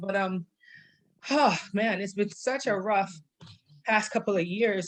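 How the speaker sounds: emotional, halting voice breaking inside phrases. A speaker tells the group about people they have lost, getting emotional. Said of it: "I might get emotional".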